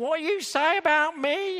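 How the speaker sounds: put-on loud, very high, slow Cockney accent. Acting out her reply to Henry Higgins, in Audrey Hepburn's put-on Cockney accent. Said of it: "Audrey Hepburn putting on this marvellous Cockney accent".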